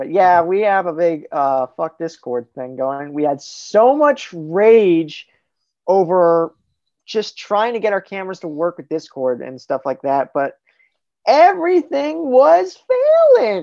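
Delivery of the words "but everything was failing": very high, squeaky, swooping sing-song. Telling others about camera trouble with Discord, in a high-pitched voice. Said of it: "I don't know why I did a high pitched voice there".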